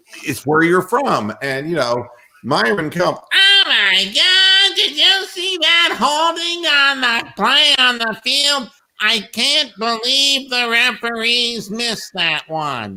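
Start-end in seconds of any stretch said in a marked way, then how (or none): 3.3-12.9 very high, slow, drawn-out whine. Show listeners how Myron Cope complained about the referees, in a whiny Myron Cope impression. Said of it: "Myron Cope was the biggest fucking whiner".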